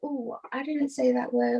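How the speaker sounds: put-on very innocent, very pure girlish voice. Imitating Rachel, a church girl personality: innocent and pure. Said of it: "very just innocent, very pure".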